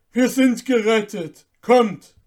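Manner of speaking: very loud ringing call. Answering a child's question, the saint is crying out. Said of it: "bravo rief der heilige".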